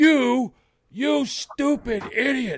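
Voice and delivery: very high, slow, drawn-out, furious raging yell. Showing how he yells at someone on the television, angry yelling. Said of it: "I'm yelling in your face".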